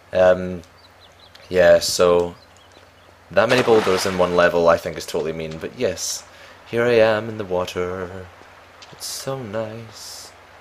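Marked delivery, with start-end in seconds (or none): 8.9-10.3 slow, soft, dreamy put-on voice. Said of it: "I don't know why I'm speaking like this".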